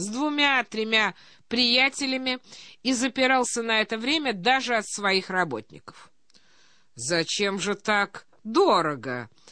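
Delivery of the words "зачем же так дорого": affectionate, tender tone. A man asks the german a question, affectionately. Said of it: "ласково сказал Пирогов".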